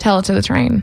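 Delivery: plain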